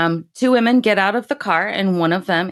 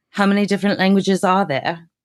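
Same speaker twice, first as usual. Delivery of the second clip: put-on, very posh upper-crust British accent, laid on thick. Podcaster retells Charlotte's reply to a woman's question, very posh British accent. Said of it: "in a very posh British accent".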